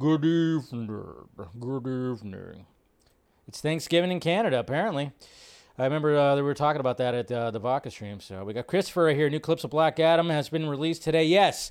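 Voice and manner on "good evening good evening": deep, low voice, very slow. Greeting people in the chat with a Hitchcock impression. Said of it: "in my best, uh, Hitchcock impression".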